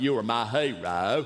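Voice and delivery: put-on slow drawling voice, hero drawn out. Recalling being on a roll doing impressions: Forrest Gump voice. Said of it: "I did Forrest Gump".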